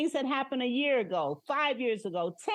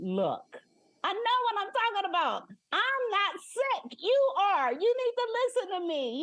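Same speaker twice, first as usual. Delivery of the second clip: very stern, firm, pitched-up voice; 8 semitones higher than usual. Retelling what was said to a frustrated friend: retelling a stern warning. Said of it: "I said to her very sternly".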